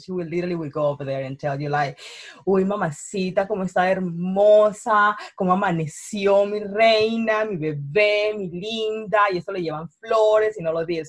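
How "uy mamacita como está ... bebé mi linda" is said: slow, charming Colombian male voice, bebé stretched out. Describing how Colombian men talk to a woman, in a Colombian male voice. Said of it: "my Colombian male voice".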